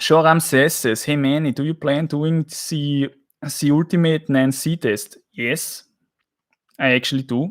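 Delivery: thick Austrian English accent. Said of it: "I would probably more talk like, like this".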